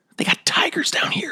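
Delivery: soft, whispered stage aside. Playing a character who spots a tiger in a hallway: whispering. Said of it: "I'll whisper to".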